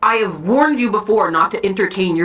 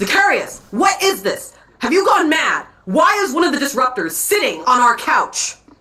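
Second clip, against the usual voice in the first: put-on angry shouting, higher pitch; 4 semitones higher than usual. Voicing a man who finds a stranger on the couch, yelling in character. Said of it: "Stop yelling".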